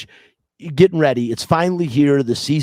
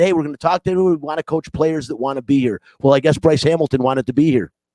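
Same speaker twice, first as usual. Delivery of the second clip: ordinary delivery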